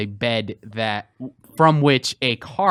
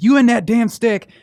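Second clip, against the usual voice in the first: high, loud, angry yell. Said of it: "just yell at him".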